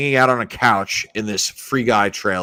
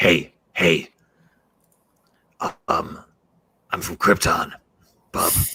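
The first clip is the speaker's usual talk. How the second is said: slow, halting, fumbling movie-hero voice; 5 semitones lower than usual. Imagining Clint Eastwood cast as Superman: Clint Eastwood as Superman, sounding like Wolverine. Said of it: "I turned Clint Eastwood into Wolverine".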